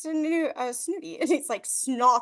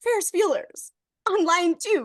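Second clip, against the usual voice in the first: put-on calm, composed, professional tone, pitched up; 5 semitones higher, 4 dB louder than usual. Retelling a film scene, imitating Grace: going all professional. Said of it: "She goes all professional".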